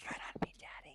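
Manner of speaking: soft, gently spoken delivery. Showing how the line is said after being asked: said softly. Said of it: "You gotta say it softly".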